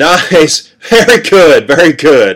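very slow, loud, drawn-out shout through laughter. Narrator shouts at the sea after it nearly swept him up, shouting, laughing. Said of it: "I shouted, laughing".

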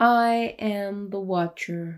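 odd, weird virtual-assistant style read-out voice. Describing a show where someone watches a house, voicing the Watcher's letter: Siri-style voice. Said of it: "Siri kind of voice".

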